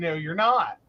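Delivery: ordinary delivery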